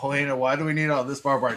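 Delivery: plain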